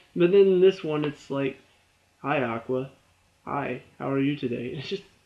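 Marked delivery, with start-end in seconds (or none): 2.2-4.7 mock emotionless, flat, slow read-off-the-page delivery. Telling someone their line reading lacked emotion, imitating flat line reading. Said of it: "straight up reading lines... put some emotion into it".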